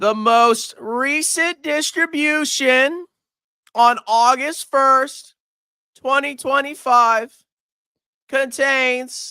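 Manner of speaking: very slow, deliberate reading. Speaker reading a distribution notice aloud to viewers, reading very slowly. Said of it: "I'm reading this very slow".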